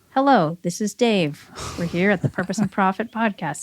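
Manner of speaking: put-on flat monotone voice. Retelling the first podcast recording, imitating Dave's monotone voice. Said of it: "Dave's very monotone".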